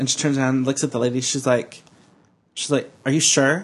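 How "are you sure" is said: mock sassy, snippy, challenging, attitude-laden tone. Retelling what a store manager said to the cashier: imitating a manager's attitude. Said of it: "giving the attitude".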